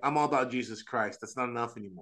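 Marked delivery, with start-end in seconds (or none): none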